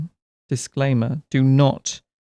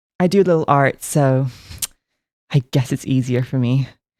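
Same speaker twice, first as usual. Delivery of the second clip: put-on rich girl voice, slower. Repeating what a girl said before she vanished, in a boba tea shop rich girl voice. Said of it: "You sounded like the, the rich girl from from the boba tea shop".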